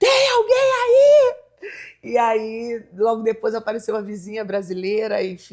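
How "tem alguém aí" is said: acted very high, loud, desperate yell. Retelling calling out at the front door of the house: imitating own past shout. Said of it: "eu gritei".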